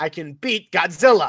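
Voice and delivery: put-on Chicago accent, heavily laid on. Joking around, the speaker switches into a Chicago voice. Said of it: "This is my Chicago voice".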